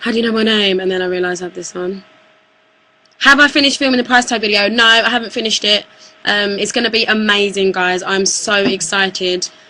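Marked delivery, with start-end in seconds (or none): 0.0-0.8 startled, gasping, caught off guard. Retelling meeting strangers in a shop who know her name: imitating her own startled reaction.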